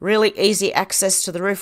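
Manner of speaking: ordinary talk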